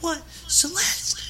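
mock very high, terrified cry, voice cracking. Recalling a parent's reaction that night, speaker is imitating Mrs. Wheelock's terrified voice. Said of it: "I can't even do it, but if I try, it's like".

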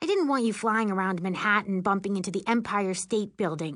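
ordinary delivery

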